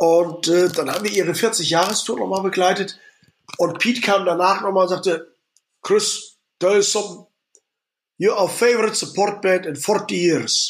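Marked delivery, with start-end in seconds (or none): 5.8-10.7 slower put-on Scottish accent in a man's voice. Retelling what Pete came and said to you after the tour, imitating Pete's Scottish accent. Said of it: "diesen schottischen Akzent".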